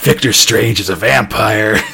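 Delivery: put-on whispering voice. Recounting what he said to Morgana, retelling his whisper. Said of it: "he's like whispering".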